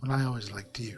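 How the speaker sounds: quietly and softly spoken. Voicing a character who answers after being intimidated: quietly spoken. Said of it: "kind of quietly spoken".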